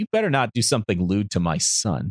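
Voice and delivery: snidely delivered, snide tone. Retelling a cartoon scene, voicing a mother's snide warning: imitating Chi-Chi snidely. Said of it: "Just kind of snidely".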